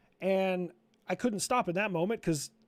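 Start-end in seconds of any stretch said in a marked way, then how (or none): none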